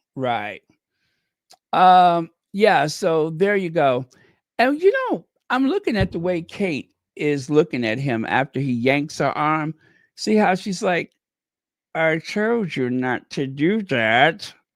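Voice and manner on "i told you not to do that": put-on speech through clenched teeth, much slower. Describing a woman's look after he yanks her arm, mimicking talking through teeth. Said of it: "Like she's talking through her teeth".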